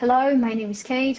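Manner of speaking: flat, monotone, level pitch, no rise or fall. Russian speaker showing how Russians usually talk in English, flat intonation. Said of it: "we have a very uh, flat intonation, and we well we usually talk like this".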